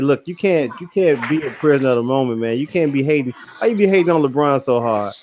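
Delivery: ordinary delivery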